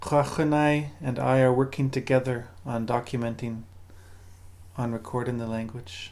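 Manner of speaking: plain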